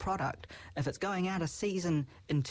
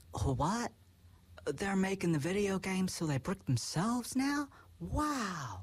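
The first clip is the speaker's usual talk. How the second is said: strong put-on Southern American accent, drawn-out "wow"; 2 semitones higher than usual. Speaker mocking stuffy old lawmakers' reaction to video games, American Southern accent. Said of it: "I sounded very American Southern there".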